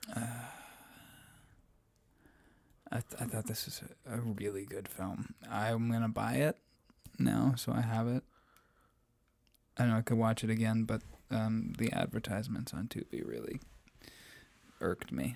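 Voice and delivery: hushed voice. Talking about a film with another speaker, whispering. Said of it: "you've been whispering this entire episode".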